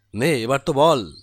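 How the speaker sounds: plain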